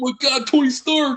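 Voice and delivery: high-pitched put-on Brooklyn accent. Discussing street-level heroes, the speaker quotes an actor's line in Tom Holland's fake Brooklyn accent. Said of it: "fake ass Brooklyn accent being like".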